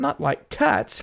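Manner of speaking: shrill, impassioned, indignant, passionate cry. Reading a story aloud, the mouse objecting to cats: shrill, passionate voice. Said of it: "cried the mouse in a shrill, passionate voice".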